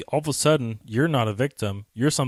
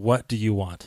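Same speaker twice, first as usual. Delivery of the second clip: slow, authoritative, commanding tone. Showing how to answer a stranger who grabs you: commanding voice. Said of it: "say with a commanding voice".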